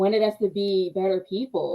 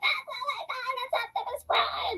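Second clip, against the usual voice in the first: put-on, excited freaking-out outburst, completely losing it; 7 dB quieter than usual. Retelling someone's reaction when the movie started: imitating someone freaking out. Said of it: "loses his shit, and he's just like".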